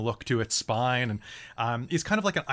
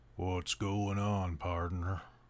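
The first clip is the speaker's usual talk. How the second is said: put-on old voice; 6 semitones lower, 7 dB quieter than usual. Voicing the old Blink Dog introducing itself: Sam Elliott voice. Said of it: "I don't wanna make you do Sam Elliott".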